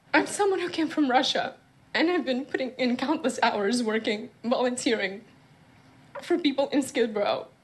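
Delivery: tearful speech, crying while talking. A show guest answers the host's question while crying. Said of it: "Just talk through the tears".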